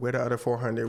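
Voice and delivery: ordinary talk, nothing marked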